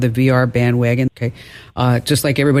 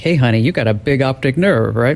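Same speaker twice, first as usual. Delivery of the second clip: mock flirty come-on delivery. Joking that a doctor's remark sounds like a pickup line: mock pickup line delivery. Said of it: "it sounds like a pickup line".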